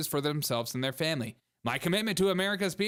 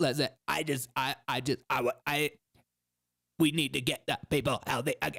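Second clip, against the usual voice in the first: stop-start, effortful, strained, halting put-on voice; 3 semitones lower than usual. Asked by another speaker to do the voice, doing RFK Jr. voice. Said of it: "you gotta do the R F K voice".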